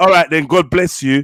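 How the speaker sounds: mock-sarcastic tone. Acting out how the other person answers when you make a statement, in a mock-sarcastic tone. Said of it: "the sarcastic tone in your voice".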